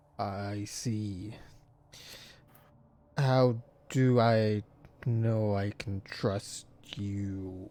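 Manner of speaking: deep, echoing giant-whale voice, very slow. A giant whale answers travellers seeking the Island of Solstice, deep, echoey voice. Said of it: "but a giant whale, / You hear in a deep, echoey voice. / You hear in a deep, echoey voice".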